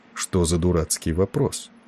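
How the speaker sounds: plain reading voice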